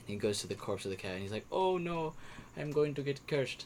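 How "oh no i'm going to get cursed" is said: put-on Indian accent, high, slow, drawn out. Telling a joke, voicing a man who accidentally hit a cow: put-on Indian accent. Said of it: "I did that accent because that's how he sounds like".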